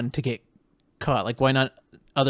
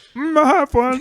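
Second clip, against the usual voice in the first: very high, pushed, deliberately bad character voice; 13 semitones higher, 6 dB louder than usual. Joking about a film character with the other speaker: bad Pee-wee Herman voice. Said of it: "I can't do a good Pee-wee voice".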